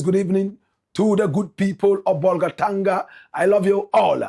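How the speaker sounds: normal talking voice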